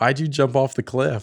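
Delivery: high, loud scream full of frustration. Retelling how someone screamed at the TV while playing Mario, retelling someone screaming. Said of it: "just screaming at the TV".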